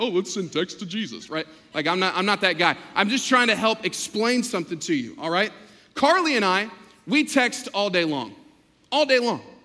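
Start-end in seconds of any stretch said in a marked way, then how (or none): 0.0-1.3 put-on hip, trendy youthful voice, mocking. Mocking the next gen guy who texts Jesus: mocking the next gen guy. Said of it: "the next gen guy".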